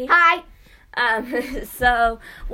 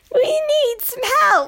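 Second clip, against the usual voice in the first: put-on old grandma voice, higher; 12 semitones higher, 4 dB louder than usual. Reading a sponsor ad with another speaker: sounding like an old grandma. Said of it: "I sound like an old grandma".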